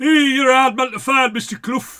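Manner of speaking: put-on thick Yorkshire accent, very loud and high. Retelling a man greeting mister clough, in a thick yorkshire accent. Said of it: "this thick Yorkshire accent".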